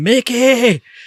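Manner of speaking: acted, high, wailing, anguished scream. Retelling a film scene of a man on his knees: imitating a scream to the heavens. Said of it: "screaming at the heavens".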